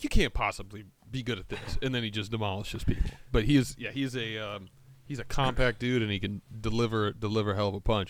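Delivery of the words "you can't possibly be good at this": ordinary talk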